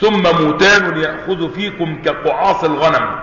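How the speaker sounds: ordinary talk, nothing marked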